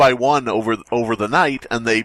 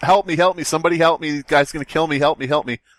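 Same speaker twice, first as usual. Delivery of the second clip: mock yelling, much higher; 5 semitones higher than usual. Retelling a bank robbery scene, the speaker plays the hostage parking guy, imitating someone yelling for help. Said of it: "he's like yelling and going".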